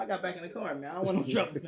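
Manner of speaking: ordinary talk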